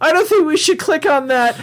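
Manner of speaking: very high-pitched, cartoonish voice. Reading a comment aloud and doing the voice, Morty voice. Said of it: "this Morty with like glasses going like".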